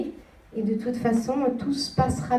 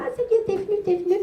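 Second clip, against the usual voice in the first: put-on tiny, cheerful voice, pitched much higher; 9 semitones higher than usual. Describing how a woman talked when she arrived: imitating a small happy voice. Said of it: "elle arrive avec une voix comme ça".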